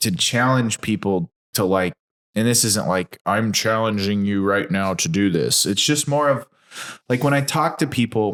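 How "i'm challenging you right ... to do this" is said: normal talking voice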